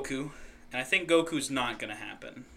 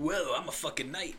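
cartoon hedgehog voice done as a whoa-dude; 3 semitones higher than usual. Joking about a werewolf game, doing a Sonic impression like Otto. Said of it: "My Sonic impression sounds like Otto from The Simpsons".

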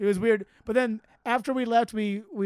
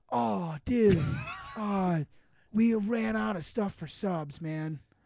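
mock stoner guy voice; 3 dB quieter than usual. Retelling what the stoner guy behind the pizza counter said: imitating a stoner guy. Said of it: "such a, like, Narbro stoner guy".

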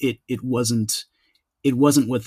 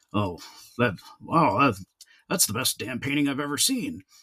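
put-on gruff voice, much slower. Retelling what a man said on seeing the painting, gruff voice impression. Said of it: "you know that gruff voice".

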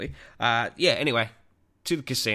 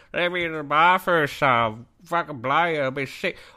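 put-on drunk old man's voice, loud and high; 7 semitones higher, 5 dB louder than usual. Retelling a bar encounter, quoting the man: imitating a drunk 70-year-old man. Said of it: "This guy's 70-year-old voice".

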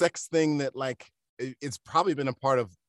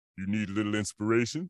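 deep, low voice from the background; 4 semitones lower, 3 dB quieter than usual. Retelling a movie scene where a voice in the background speaks: imitating a deep voice. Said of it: "you hear a deep voice in the background go".

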